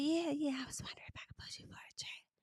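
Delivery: soft, hushed, breathy whisper. Retelling what a cast member said to him, imitating someone whispering. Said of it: "She about pissed me off just whispering".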